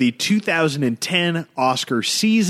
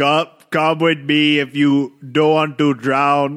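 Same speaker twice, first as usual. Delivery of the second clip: put-on action-hero voice, Austrian accent drifting into Jamaican. Doing a Terminator voice that keeps sounding Jamaican: Terminator impression sounding Jamaican. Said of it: "you sound like you're Jamaican".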